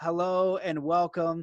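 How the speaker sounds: dreary, level, flat, sad monotone droning. Imitating how he used to introduce his podcast, put-on sad monotone. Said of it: "so, you know, sad and, and monotone".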